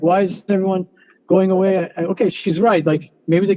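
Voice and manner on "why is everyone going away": normal talking voice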